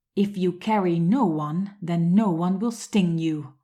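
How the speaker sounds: loud, furious, raging witch-voice roar. A narrator reads the witch calling after Amma: furious roar. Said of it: "the furious witch roared".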